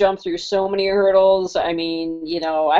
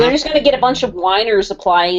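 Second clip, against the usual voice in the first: usual speaking voice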